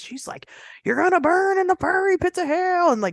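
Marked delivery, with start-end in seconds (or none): 0.8-2.9 play-acted, very high, shrill preaching-style yell. Retelling an old woman who yelled at them while parked: imitating a woman yelling. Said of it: "she starts yelling at us".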